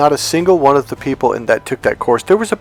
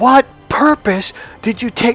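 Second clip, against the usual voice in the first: put-on screaming, higher pitch; 9 semitones higher than usual. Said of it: "and I scream".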